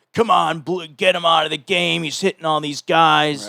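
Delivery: restless, antsy crowd heckling, acted out. Retelling the crowd after the pitcher hit three batters: imitating an antsy crowd. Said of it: "the crowd's getting all antsy".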